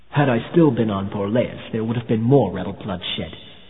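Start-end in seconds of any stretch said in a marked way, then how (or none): none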